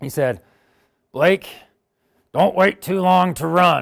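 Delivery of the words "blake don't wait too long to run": put-on loud, slow, gruff old man voice, words drawn out. Quoting what an eighty-four-year-old man said to him, imitating a gruff voice. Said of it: "He's got a really gruffy voice".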